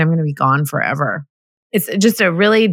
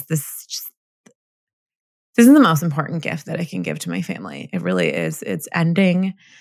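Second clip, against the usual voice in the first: crying, tearful, choked-up voice. Talking about family to an audience, choking up, crying. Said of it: "I'm going to cry while I talk about this".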